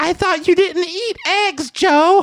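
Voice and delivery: squeaky, very high-pitched tone. Reading a story aloud, voicing a woman at a table: high-pitched voice. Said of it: "she said in a high-pitched voice".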